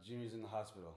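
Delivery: normal talking voice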